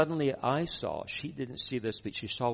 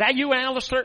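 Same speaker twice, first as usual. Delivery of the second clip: put-on very high, loud, belted Texan accent; 13 semitones higher, 10 dB louder than usual. Retelling a phone call from Cindy Jacobs, in her Texan accent. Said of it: "in her Texan accent".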